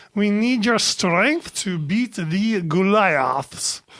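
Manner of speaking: put-on comic French accent. Reading a listener review aloud as Inspector Clouseau. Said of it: "read these reviews as Inspector Clouseau".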